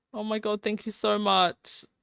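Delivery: near tears, on the verge of crying. Thanking someone who just donated, near tears. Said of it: "I'm actually gonna cry".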